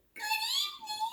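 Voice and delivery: very high-pitched, silky monster voice. Reading a story aloud, the narrator voices a second monster in a high, silky voice. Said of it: "he said in a high, silky voice".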